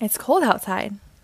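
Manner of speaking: plain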